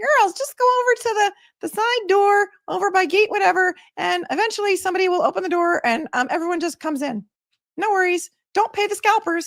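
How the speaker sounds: very high, squeaky, helium-like voice. Retelling what Jerry told the girls who had no tickets, in Jerry's very high squeaky voice. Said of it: "he had a very really high squeaky voice. It was like helium".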